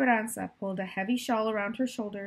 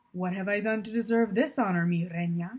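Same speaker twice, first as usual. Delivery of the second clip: playful, friendly, light teasing tone. A narrator reads Miguel greeting Esperanza as he walks toward her, teasing. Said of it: "he said".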